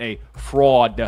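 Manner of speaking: attempted, put-on New York accent. Previewing a match, a host quotes one competitor calling another a fraud, attempted new york accent. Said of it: "I tried to do my best uh, New York accent there".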